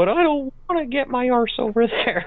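very high, fast, stuttering, teary voice. Telling a story, speaker replays his own reply to a man hollering for him, retelling in stuttery, teary voice. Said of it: "in a stuttery, teary-eyed voice".

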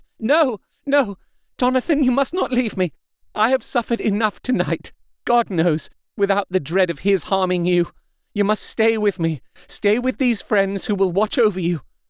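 frantic, desperate, high-pitched clinging outcry. Seizing hold of her husband Jonathan, a wife cries out frantically. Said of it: "she seized hold of him and cried out".

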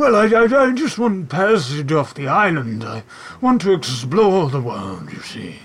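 put-on talking horse voice. A horse with a bow tie asks departing travelers for passage, in a talking horse voice. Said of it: "and you see eventually a familiar horse with a bow tie and a floating mage hand trots his way down and says, / and you see eventually a familiar horse with a bow tie and a floating mage hand trots his".

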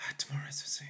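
hushed, murmured whisper under the breath. Voicing a praying prisoner boy, heard in snippets: whispering under his breath. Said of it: "he's whispering under his breath".

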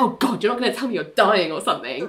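put-on disgusted delivery. Recapping a scene where Billy won't talk, speaker acts out Ali, imitating Ali's disgust. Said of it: "she's disgusted and she's like".

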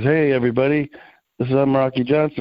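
ordinary talk, nothing marked

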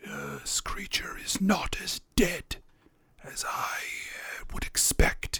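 hoarse, raspy whisper, very quiet, barely voiced. A game narrator voices a box whispering back to a woman, raspy whisper. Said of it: "in a raspy voice, whispers back".

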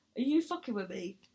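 mock playful, joking, teasing ribbing. Retelling asking an audience member a joking question while disoriented. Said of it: "So I was just jokingly like".

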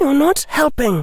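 trembling voice. Hermione speaks to a companion as they walk away from the others, shaky voice. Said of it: "sounding shaky".

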